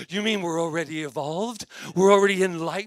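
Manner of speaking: loud, high-pitched, amazed and disbelieving.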